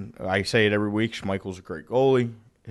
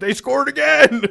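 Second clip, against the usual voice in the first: very high, very loud, hoarse, rough holler; 9 dB louder than usual. Retelling a father calling upstairs during a game: imitating dad yelling. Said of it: "yelling up to me".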